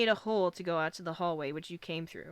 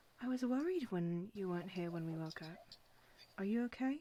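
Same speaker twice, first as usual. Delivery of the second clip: hushed, very soft, very quiet lowered voice; 9 dB quieter than usual. She sidles up to the listener so the others won't hear, lowered voice. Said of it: "she kind of lowers her voice so the others who don't hear".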